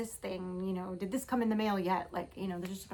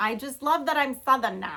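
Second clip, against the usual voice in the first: put-on very loud New York accent; 5 semitones higher, 10 dB louder than usual. Speaker quotes her mom telling everybody she's Southern, in a New York accent. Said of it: "She tells everybody she's Southern now in a New York accent".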